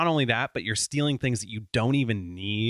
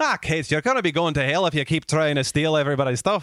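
rough, attempted put-on Irish accent; 4 semitones higher, 4 dB louder than usual. Asked to do an irish accent, scolding kate in a role-play, attempted irish accent. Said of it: "You do an Irish accent".

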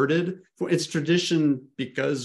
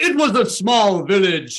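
mocking, loud, swooping overdramatic delivery; 7 semitones higher, 7 dB louder than usual. Describing students reading aloud in class, imitating an overdramatic theatrical reading. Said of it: "their personal Oscar moment where they're like".

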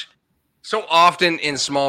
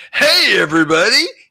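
put-on radio DJ delivery, high and loud; 6 semitones higher, 6 dB louder than usual. Recalling an old on-stage speaker's voice, imitating a radio DJ voice. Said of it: "I'd do all like the radio DJ thing".

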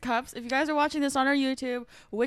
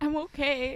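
nervous, breaking, cracking voice, close to tears; 2 semitones higher than usual. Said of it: "You're like".

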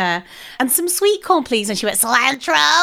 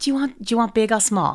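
put-on American accent, slower; 4 semitones lower, 4 dB quieter than usual. Retrying an impression of a woman after being told she sounded different; imitating an American accent. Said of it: "That's a bit better".

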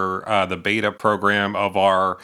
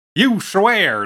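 put-on very high, loud, homespun folksy voice; 11 semitones higher, 5 dB louder than usual. Joking with a fellow player during a word game, in a folksy voice. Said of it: "that's my folksy voice".

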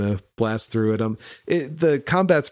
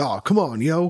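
exaggerated tough-guy voice; 4 semitones higher than usual. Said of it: "he's like talks like this to you".

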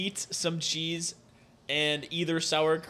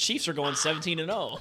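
ordinary talk

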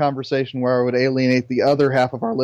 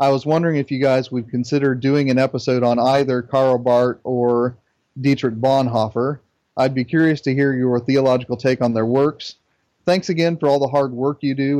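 ordinary delivery

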